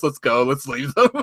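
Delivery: acted, utterly serious, grave delivery. Recounting a video game match, speaking to a fellow player in mock dead-serious voice. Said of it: "said with the most serious voice".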